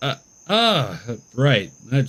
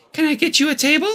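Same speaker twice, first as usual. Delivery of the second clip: put-on girlish voice pitched very high; 14 semitones higher than usual. Voicing the waitress greeting the players, girl voice. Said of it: "You guys like my girl voice right now?".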